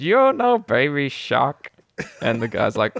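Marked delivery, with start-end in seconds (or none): 0.0-1.7 slow, drawn-out put-on old man voice. Retelling a scambaiter's character asking a scammer: imitating an old guy voice. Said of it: "makes him sound like an old guy".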